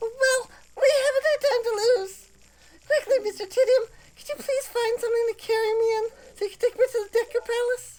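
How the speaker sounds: very high-pitched princess character voice. Reading a game princess's lines aloud: Deku Princess voice. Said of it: "I kinda actually like that voice".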